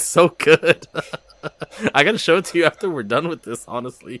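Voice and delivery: laughing uncontrollably. Speaker telling the listener about a play they love, can't stop laughing. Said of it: "i can't stop laughing".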